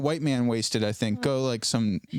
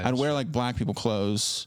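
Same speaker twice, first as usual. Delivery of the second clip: ordinary delivery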